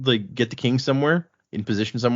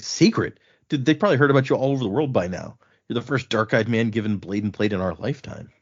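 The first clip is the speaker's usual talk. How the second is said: ordinary delivery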